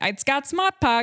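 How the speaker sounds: imitated Boston accent. Quoting an actor from a car commercial: Boston accent. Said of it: "used the Boston accent".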